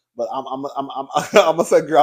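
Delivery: high stuck stutter, repeating the opening word. Speaker trying to give her opinion to listeners, stuttering. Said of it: "I'm already stuttering".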